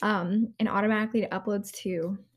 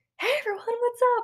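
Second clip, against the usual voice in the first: mock bright, chipper, upbeat, very high voice; 14 semitones higher than usual. A podcast host recalls how they opened the episode: mimicking own chipper greeting. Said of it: "a lot more chipper".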